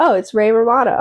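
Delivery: ordinary delivery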